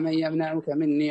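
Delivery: ordinary delivery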